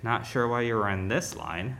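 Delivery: put-on under-breath muttering. Speaker retells a server's remark to a customer in the wrong line: imitating a muttering server. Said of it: "under her breath".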